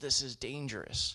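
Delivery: ordinary delivery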